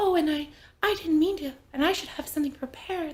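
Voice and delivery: breathy, high-pitched put-on voice. Describing an actress's Marilyn Monroe voice: breathy high-pitched Marilyn Monroe voice. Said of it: "breathy, like".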